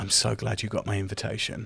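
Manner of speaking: whispered murmur under breath. Voicing a character speaking quietly away from the crowd: whisper murmur under breath. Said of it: "he kind of whisper murmurs under his breath".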